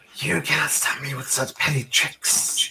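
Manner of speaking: high, hissing, sneering voice. Voicing a foe that skitters across the ceiling, hissing a little at the party. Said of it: "kind of hisses at you guys a little".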